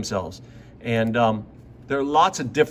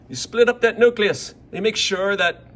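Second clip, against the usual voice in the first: put-on Irish accent; 7 semitones higher, 3 dB louder than usual. Explaining the steps of mitosis, slipping into an irish accent. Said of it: "Why am I going into my Irish accent again?".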